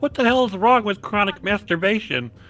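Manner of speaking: high, loud mock scream.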